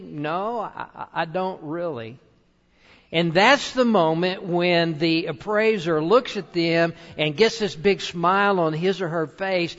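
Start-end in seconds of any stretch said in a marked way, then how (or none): 0.0-2.2 put-on sheepish, quieter, slower delivery. Retelling how the item's owner answers the appraiser: mock-sheepish reply. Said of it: "says sort of sheepishly".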